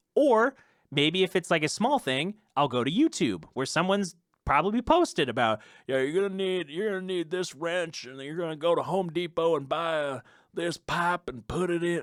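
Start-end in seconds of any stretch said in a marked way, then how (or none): 5.9-12.1 fake Arkansas accent, handyman-style voice. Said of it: "fake Arkansas, wherever this accent is".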